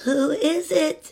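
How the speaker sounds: put-on faint, weak, feeble old grandmother voice. Reading a fairy tale aloud, Grandmother calling out in a weak voice. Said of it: "called Grandmother in a weak voice".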